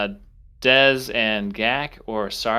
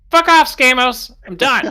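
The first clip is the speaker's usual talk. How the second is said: fed-up, high, loud shout. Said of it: "He turns around and goes".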